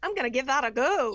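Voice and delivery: very loud, high put-on northern US Yankee accent. Trying to talk like her husband's family, doing a Yankee accent. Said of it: "trying to do my Yankee voice".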